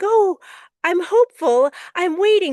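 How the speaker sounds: very high, voice shot up an octave. Voicing how we sound while waiting, voice up an octave. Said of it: "do you hear the way my voice goes up an octave?".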